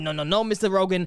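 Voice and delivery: ordinary talk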